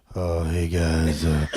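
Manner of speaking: mopey, gloomy, depressed, down-in-the-dumps voice. Imitating another speaker's intro on the mic: imitating a depressed greeting. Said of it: "Why you sound so depressed".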